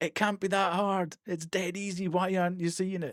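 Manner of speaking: exasperated shouting. Imitating chat yelling at the monitor over a puzzle: imitating chat shouting and screaming. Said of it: "shouting and screaming at the monitor going".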